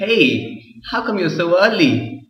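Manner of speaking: high, bright, mock-cheerful, ironic. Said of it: "Irony is saying opposite of what you mean".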